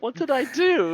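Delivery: high, baffled, bewildered, confused voice. Voicing a character who is blamed by the group: confused. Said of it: "very confused right now".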